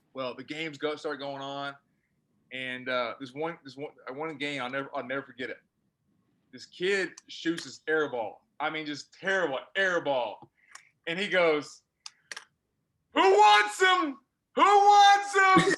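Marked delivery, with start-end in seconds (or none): 13.1-15.7 put-on yell, higher and louder. Retelling how a coach yelled at a game: imitating a coach yelling. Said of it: "yelling, yelling".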